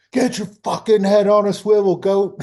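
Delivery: shrill, high, loud drill-sergeant yell. Retelling how a sergeant used to yell at him: imitating a sergeant yelling. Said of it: "yelling at me".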